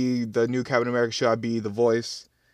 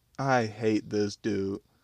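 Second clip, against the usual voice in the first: ordinary delivery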